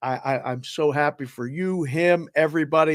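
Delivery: plain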